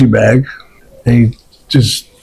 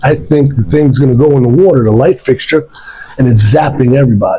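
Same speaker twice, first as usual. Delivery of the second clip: ordinary delivery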